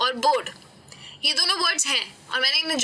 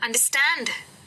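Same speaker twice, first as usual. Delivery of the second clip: understand with heavy weight on final syllable stand. English pronunciation lesson explained in hindi: stress on -stand of understand. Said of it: "तो ये जो stand है".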